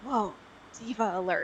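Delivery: whispered aside. A player voices a character whispering to another about a third, whisper. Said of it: "Boss is going to whisper to Briar".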